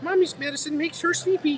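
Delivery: put-on very high, soft little kid voice. Reading from a medicine label, a speaker uses a little kid voice. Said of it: "That's my little kid voice".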